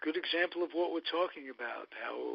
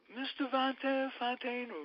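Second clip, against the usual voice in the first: voice shooting up to a very high pitch; 11 semitones higher than usual. Retelling asking a hockey player for a favor as a kid: imitating own voice going up.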